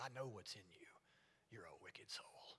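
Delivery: hushed, distrustful, very quiet voice. Showing how someone would talk to everybody, in a suspicious voice. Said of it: "talk to everybody with a suspicious voice".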